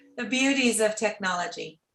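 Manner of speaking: ordinary talk, nothing marked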